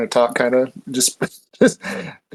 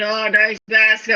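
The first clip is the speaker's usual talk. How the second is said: put-on drunk-sounding, in a stupor; 9 semitones higher than usual. Player describing their character hanging out eating onions, in a drunken stupor. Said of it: "in like a drunken onion stupor".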